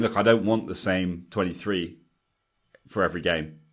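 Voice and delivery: ordinary talk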